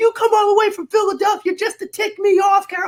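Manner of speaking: put-on, very high, yelled drill-instructor tirade. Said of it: "they're yelling at me from both sides".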